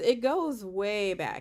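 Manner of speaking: slow, emphatic, stretched-out delivery.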